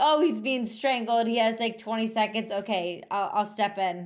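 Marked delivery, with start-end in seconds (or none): none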